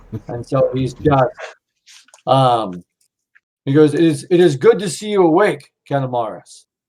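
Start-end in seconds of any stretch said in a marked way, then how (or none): 3.9-6.6 put-on heavy German accent. Voicing Sifu Schmitz greeting Canamaris, who has just woken: Sifu Schmitz heavy German accent. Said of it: "a heavy German accent".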